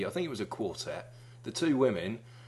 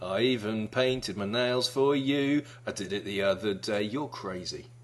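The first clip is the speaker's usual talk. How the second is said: ordinary talk, nothing marked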